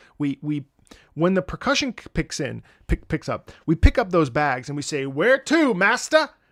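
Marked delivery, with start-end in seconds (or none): 5.1-6.3 loud, pitched-up attempted British accent. Acting out picking up the bags as the percussion picks up: put-on British accent. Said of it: "that was my attempt at a British accent".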